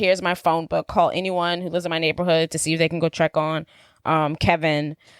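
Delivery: ordinary talk, nothing marked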